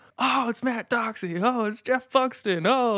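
put-on very high, stretched-out, drawn-out hollering. Retelling running alongside the kids: imitating yelling out their names. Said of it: "I'm yelling out their names".

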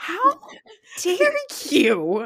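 mock scream, loud, high and swooping. Retelling a reaction to a reality show: imitating screaming at the tv. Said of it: "I was screaming at my television".

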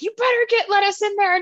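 high-pitched, screaming delivery. Retelling a woman screaming at someone over the phone, imitating her screaming. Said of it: "She like screams at him".

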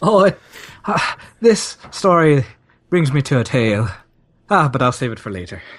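put-on, not genuine Irish accent. Doing a bit with others, in a fake Irish accent. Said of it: "I know that's not a real Irish accent".

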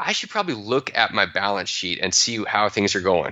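normal talking voice

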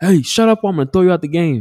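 shrill, high-pitched, fed-up angry shouting. Retelling a game where the referee got angry at his dad: imitating an angry referee. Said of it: "He's pissed off. He's like".

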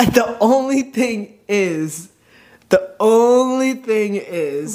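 slow, drawn-out, odd-sounding voice.

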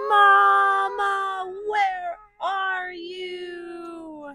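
very high, loud howl, "you" drawn out. Reading a story aloud, the lost little monkey takes a breath and howls. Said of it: "He took a deep breath and howled".

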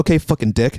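sour, grumbled aside, said to oneself. Retelling a reaction to a man who ignored a held door: imitating muttering under breath. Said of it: "underneath my breath".

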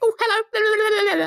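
tiny, squeaky, very high helium fairy voice. Showing how fairies in fantasy talk, in a high helium voice. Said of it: "in like high helium voices".

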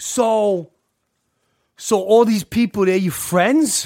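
put-on Long Island accent. Retelling what Kim asked at her house, imitating Kim's thick Long Island accent. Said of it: "she's got a really thick Long Island accent".

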